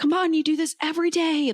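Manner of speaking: cheering voice. Retelling watching an athlete on TV: imitating own cheering. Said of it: "cheering for him like he is my best friend".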